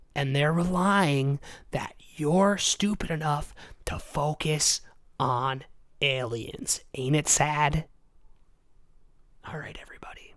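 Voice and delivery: speaking in a whisper. Ranting about oil corporations and aliens, whispering. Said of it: "I'm done whispering".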